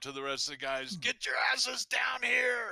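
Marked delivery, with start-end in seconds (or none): 1.0-2.7 very high, shouted holler. Calling up to the rest of the group from below: yelling to others. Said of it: "I step up and I yell up".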